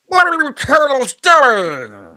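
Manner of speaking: old-school cartoon voice, shrill, booming, slow shriek, "doing" drawn out. Showing how to voice the cartoon villain: old school Krang voice. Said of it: "the old school voice".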